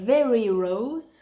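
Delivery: put-on proper English accent, laid on thick. Reviewing a micellar water, saying its product name in an English accent. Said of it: "avec mon super accent anglais".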